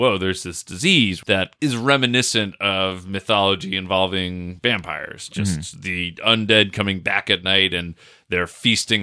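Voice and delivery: ordinary talk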